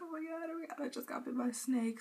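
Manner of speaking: mock tearful words through sobs, high crying outburst. Retelling getting bitten by a snake, imitating own past crying. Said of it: "I was crying".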